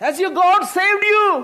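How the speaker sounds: acted out, anguished, pained, very high-pitched calling out. Retelling a story, speaker acts out a king calling to Daniel, anguished call. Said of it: "It is anguished voice".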